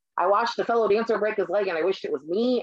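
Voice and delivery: ordinary talk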